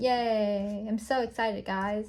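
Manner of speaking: fake, sarcastic excitement. Telling viewers about an assignment and next week's exam, sarcastic fake excitement. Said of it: "Do you hear the excitement in my voice?".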